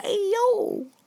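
put-on squeaky, very high, tiny New York accent. A player in a group scene jumps in with a tiny new york accent. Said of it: "A little tiny New York accent".

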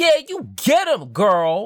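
very high, swooping, excited cheering scream. Voicing a character cheering on an ally in a fight: Titan screaming encouragement. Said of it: "Titan just screams at it".

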